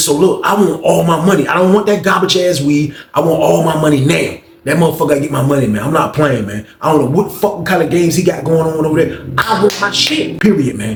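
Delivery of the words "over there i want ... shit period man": ordinary talk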